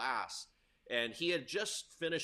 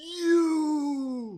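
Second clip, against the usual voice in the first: shrill, booming, very loud, high scream stretched long; 13 semitones higher, 12 dB louder than usual. Retelling how a man looked at you and screamed while a kid was talking, imitating a scream. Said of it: "he just he just screams".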